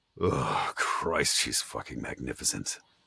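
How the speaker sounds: low, desirous groan. Coaching someone on delivering an internal-monologue line, groaning with desire. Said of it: "you can even groan in that part".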